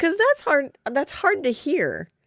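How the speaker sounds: very high, swooping talk through laughter. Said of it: "why are you laughing?".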